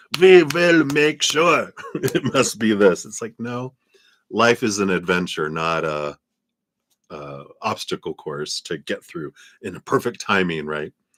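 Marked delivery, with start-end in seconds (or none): 0.2-3.0 loud, fake put-on German accent. Explaining his German heritage, the speaker slips into a put-on German accent. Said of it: "So that's why I go to the German".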